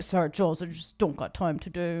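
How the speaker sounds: put-on deep, soft voice with a faint British accent. Retelling what her husband said when invited to join: imitating husband with deep voice. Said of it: "That sounded a little British".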